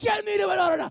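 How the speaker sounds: frantic, desperate scream, very loud and very high. Recounting screaming at god to get to the daughter, retelling one's own screaming. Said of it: "I am screaming".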